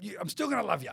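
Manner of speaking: imitated quick delivery. Retelling what a sponsor said in the car before a big show: imitating someone saying it quickly. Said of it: "the way he said it so quick".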